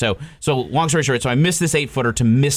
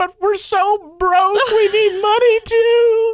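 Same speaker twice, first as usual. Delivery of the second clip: mock crying, bawling, higher and louder; 5 dB louder than usual. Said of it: "just starts bawling on the t-".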